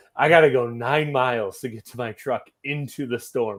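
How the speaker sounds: ordinary talk, nothing marked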